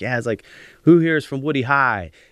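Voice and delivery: put-on loud, high Pittsburgh accent slipping out. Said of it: "my Pittsburgh accent came out".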